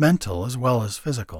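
plain

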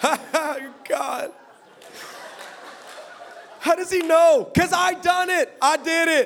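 high, drawn-out laugh, half laughing, half pained. Acting out how a listener reacts to him: imitating half laughter, half pain. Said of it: "half laughter, half pain".

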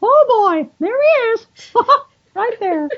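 put-on cartoon mouse voice. Explaining how an actor found a character's voice, demonstrating Mickey Mouse voice. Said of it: "go up higher and higher and higher".

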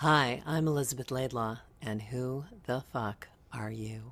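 deep announcer-style voice. Saying the show's intro line: dropped-down voiceover tone. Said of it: "I like the way you drop that tone down".

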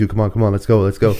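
plain

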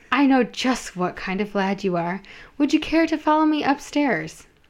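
ordinary delivery

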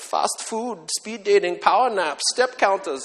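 put-on German accent. Quoting a man's list of ways we accelerate ourselves, put-on German accent. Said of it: "in his German voice, he's like".

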